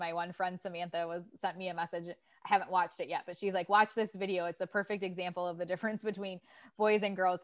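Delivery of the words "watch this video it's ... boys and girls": usual speaking voice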